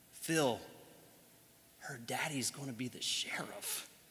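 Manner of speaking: very soft, very quiet, sobering hush. Retelling words once said to a man holding his baby girl, hushed tone. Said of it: "in sort of a hushed tone".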